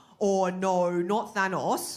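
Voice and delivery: put-on goofy, laid-on Australian accent played for laughs. Imagining stars keeping their own accent in films: Chris Hemsworth as Thor, Australian accent. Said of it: "doing the Australian accent in their films".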